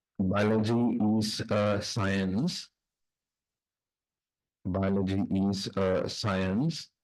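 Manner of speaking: slow, deliberate dictation pace, each word spaced out. Dictating notes aloud to a class: reading slowly for dictation. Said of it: "I'll read slowly".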